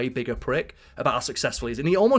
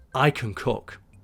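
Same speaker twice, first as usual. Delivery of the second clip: put-on whisper. Retelling how a chef leaned over to an arguing owner: imitating a whisper. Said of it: "he whispers in his ear".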